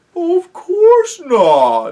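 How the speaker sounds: scandalized, very high, very loud, shocked cry. The bear, told not to suck his paws, answers Peter in a very shocked voice. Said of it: "said the bear in a very shocked voice".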